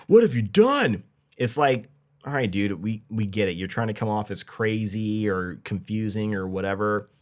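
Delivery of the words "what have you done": very high, shrill, high-pitched scream. Reviewing a scene, retelling how a character screams at another, retelling a scream. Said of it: "he screams at her like".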